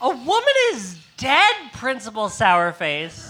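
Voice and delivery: loud, high-pitched indignant outburst.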